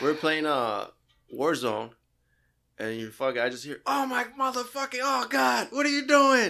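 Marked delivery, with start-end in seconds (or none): 3.9-6.5 put-on very high, loud, shrieking outburst. Retelling what another player heard during a game: imitating someone screaming. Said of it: "You're just screaming at Leo".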